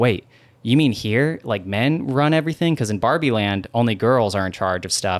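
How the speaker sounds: ordinary delivery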